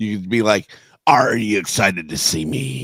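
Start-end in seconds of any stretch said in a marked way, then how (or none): 1.0-2.9 low, slow, drawn-out pirate voice. Suggesting how to tease a man who hates it, the speaker demonstrates a pirate voice. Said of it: "go ahead and talk like a pirate".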